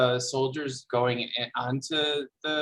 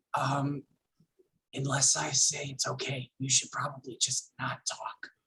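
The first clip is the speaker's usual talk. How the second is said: quiet, hushed in-character whisper; 6 dB quieter than usual. Playing a character warning Captain Pomelio while walking up: whispering in character. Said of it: "I'm gonna whisper to Captain Pomelio".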